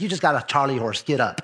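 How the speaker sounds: merciless, unsympathetic grandma voice. Retelling a fall, imitating a merciless grandma. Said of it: "Grandma had no mercy".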